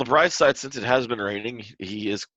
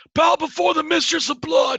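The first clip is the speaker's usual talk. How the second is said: very high, loud shout; 6 dB louder than usual. Narrating a game, a character calls out as the group enters: shouting. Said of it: "he shouts".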